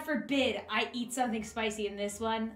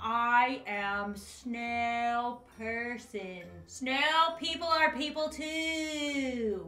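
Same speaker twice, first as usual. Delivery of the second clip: very slow, slack-jawed, overly drawn-out speech. Pretending to be a snail person, talking with mouth held open. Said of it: "I have to keep my mouth open if I want to talk like this".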